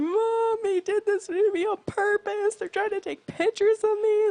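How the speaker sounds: very high, loud, sobbing, wailing bawling. Retelling a brother's phone call to mom at work: imitating someone bawling. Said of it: "he called my mom at work bawling".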